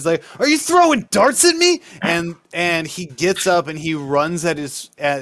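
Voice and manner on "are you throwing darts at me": accusing, shrill yell pitched very high. Voicing a struck character confronting the guy ordering drinks: yelling at someone. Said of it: "he starts yelling at the guy".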